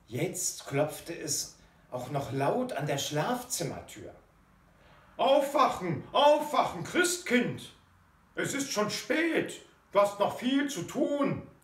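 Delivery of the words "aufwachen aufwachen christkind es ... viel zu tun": loud, high-pitched calling out. Someone knocks at the bedroom door to wake a late sleeper; calling out. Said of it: "rief jemand".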